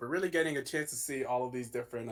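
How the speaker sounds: ordinary talk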